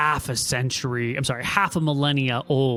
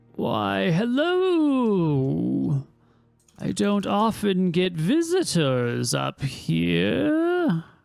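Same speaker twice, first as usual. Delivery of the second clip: put-on high, swooping elderly voice, "hello" drawn out; 5 semitones higher than usual. From within the cave, an elderly Toman speaks to the visitors, old elderly voice. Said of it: "you hear the old voice of an elderly Toman saying".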